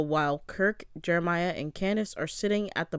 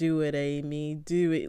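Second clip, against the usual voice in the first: imitated drunken voice, much slower; 2 semitones lower than usual. Retelling a drunk man answering a woman who threatened him, imitating a drunk guy. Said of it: "like in his drunken stupor".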